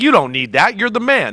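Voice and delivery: ordinary talk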